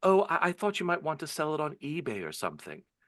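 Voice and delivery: very sweet voice, high-pitched. Retelling a teacher's reply at the showcase: imitating Salome's sweetest voice. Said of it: "And in the sweetest voice".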